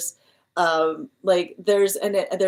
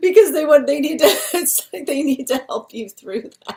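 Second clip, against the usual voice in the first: talking through laughter, higher; 8 semitones higher, 4 dB louder than usual. Giving a reading to a viewer and struggling to explain it, laughing while talking. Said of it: "I'm sorry I'm laughing so hard".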